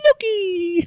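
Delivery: squeaky chipmunk voice. Shouting the show's name for fun: squeaky chipmunk voice. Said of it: "Like a chipmunk".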